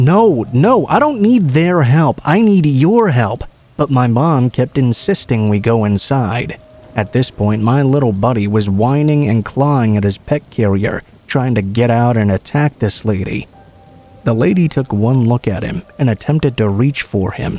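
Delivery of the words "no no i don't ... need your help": high, desperate screaming. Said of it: "she was screaming".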